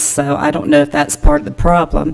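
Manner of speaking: voice catching, cracking up high with emotion.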